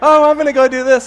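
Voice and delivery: high, loud, breezy, chatty tone.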